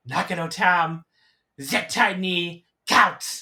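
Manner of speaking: loud, slow, drawn-out yell. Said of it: "yelling at Tam".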